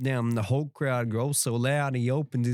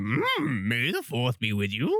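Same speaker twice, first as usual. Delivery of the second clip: odd put-on voice, sing-song, swooping up and down. Wishing the others a happy Star Wars Day: Yoda voice. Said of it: "That's a good impression".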